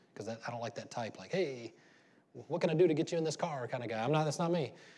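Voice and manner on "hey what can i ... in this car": oily, slimy car-salesman patter. Describing a type of salesman the speaker dislikes, imitating a slimy salesman. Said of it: "a slimy salesman".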